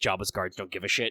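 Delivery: ordinary talk, nothing marked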